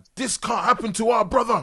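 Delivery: high, indignant outburst. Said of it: "all indignant".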